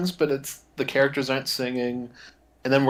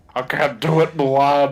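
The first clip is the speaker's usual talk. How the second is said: put-on weird smoker's voice, louder; 6 dB louder than usual. Answering a plea to the horse Artax: Frank Welker impression. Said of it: "a great Frank Welker impression".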